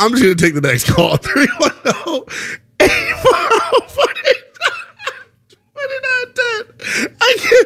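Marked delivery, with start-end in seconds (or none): 1.2-7.7 high, slow, helpless laughing fit. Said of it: "I'm laughing because".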